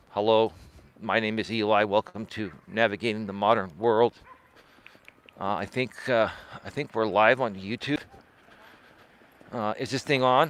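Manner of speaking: low, flat, dull, lifeless droning monotone. A channel creator shows how not to speak to viewers, monotone boring voice. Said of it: "not speak like a monotone person".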